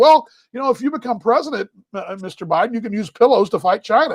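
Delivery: ordinary talk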